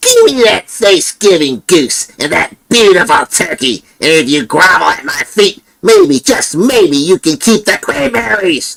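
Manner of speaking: very high, squeaky, angry puppet voice. Closing a scary-story video, the storyteller performs a line; angry Eric puppet voice. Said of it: "an angry Eric puppet voice".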